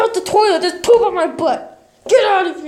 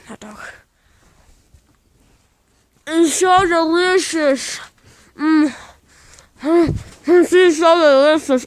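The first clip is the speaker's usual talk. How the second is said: muffled speech through a mouthful, chewing; 3 semitones lower than usual. A character stops mid-conversation to take a bite of hot dog, talking while eating. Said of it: "take a bite of my hot dog".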